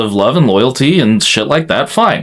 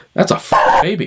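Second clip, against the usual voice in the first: put-on Australian accent; 3 semitones higher than usual. Retelling a movie ending, quoting the character: Aussie Jason Momoa impression. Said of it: "Aussie Jason Momoa comes in the background and is like".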